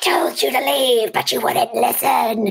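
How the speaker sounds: deep demonic monster-like voice. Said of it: "trying to sound more and more demonic".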